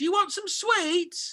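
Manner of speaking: high, slow, sugary, patronizing flight attendant voice. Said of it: "flight attendant came past and was going to him like".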